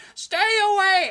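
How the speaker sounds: high, loud, shrill, drawn-out scream from far away. Describing a man on a mountain top yelling at younger people, imitating a man screaming. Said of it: "he's just screaming".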